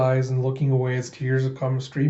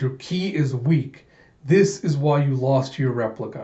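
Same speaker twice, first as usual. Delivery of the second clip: ordinary talk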